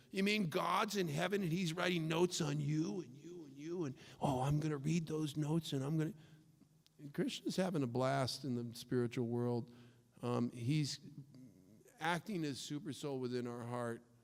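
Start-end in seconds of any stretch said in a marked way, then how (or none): 0.1-6.1 mock, scornful, derisive tone. Imitating how critics say an argument, very mockingly: imitating mocking atheists. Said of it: "they say it very mockingly".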